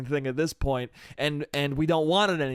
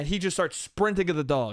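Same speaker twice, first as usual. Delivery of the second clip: ordinary talk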